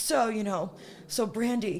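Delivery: super stuffy posh upper-class voice, slow drawl. Retelling what a headmaster said on a campus tour: imitating upper crust stuffy voice. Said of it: "he spoke like this, like, typical, like, you know, super, you know, upper crust stuffy".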